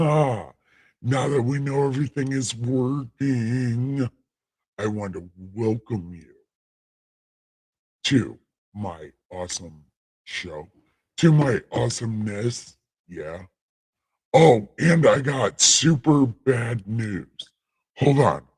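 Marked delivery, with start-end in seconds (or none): 0.0-17.3 voice of a deity. Host welcoming listeners to the show, speaking in a God voice. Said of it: "I'll get out of God voice".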